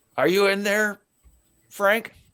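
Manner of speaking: high, loud stage whisper. The halfling lies by a gap under a door, calling inside in a loud whisper. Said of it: "he kind of like whispers loudly".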